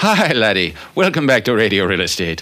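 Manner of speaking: put-on Irish accent. A radio host welcomes listeners back to the show in an Irish accent. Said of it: "I do Irish much better".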